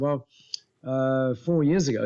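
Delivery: plain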